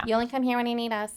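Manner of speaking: put-on nasally mocking voice. Acting out what someone might say when you come in, in a mocking nasal Karen voice. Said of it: "Why do we get all nasally".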